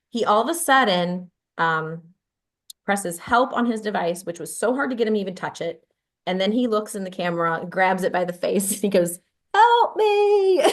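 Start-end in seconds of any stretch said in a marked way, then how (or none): 9.5-10.6 very high-pitched, loud little squeaky voice. Retelling how he grabbed the camera and called out, high-pitched voice. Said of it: "in this high-pitched voice".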